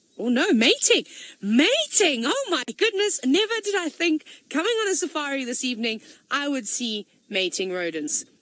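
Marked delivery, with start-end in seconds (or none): 0.5-3.2 high, loud, thrilled, swooping exclamations. Spotting two animals mating during an evening safari: excited exclaiming. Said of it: "This is very exciting".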